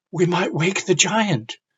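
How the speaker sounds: scared, fearful, frightened high voice. Demonstrating how to read a story line aloud to children, frightened. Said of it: "You should sound frightened in".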